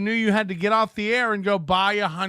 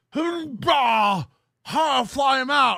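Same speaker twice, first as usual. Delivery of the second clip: mocking parody of a silly impression voice, higher; 5 semitones higher than usual. Parodying the voice another speaker uses for Aaron: mocking someone's silly impression voice. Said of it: "This is the voice he does".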